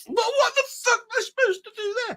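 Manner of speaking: put-on voice, shooting up very high. Retelling being shot at in a hard arcade game: imitating a high-pitched voice. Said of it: "your voice goes high like that".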